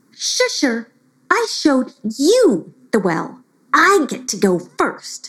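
irritated, huffy narrator voice. Narrating a story, voicing Grumpy Lena speaking to Shusher, in a grumpy voice. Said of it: "she said in a grumpy voice".

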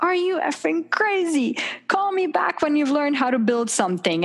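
mock screaming, high-pitched. Recounting a phone call where a guy screamed at them, retelling a scream. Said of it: "the guy just like screamed at me".

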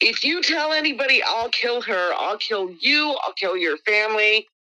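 angry, heated, hostile threatening outburst. Retelling a threat shouted while leaving: retelling someone screaming threats. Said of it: "this guy was screaming at me and my friend".

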